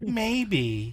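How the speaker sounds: high, drawn-out maybe. Voicing a message heard in your head: Magic Conch Shell voice. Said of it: "Imagine Magic Conch Shell. It's just going".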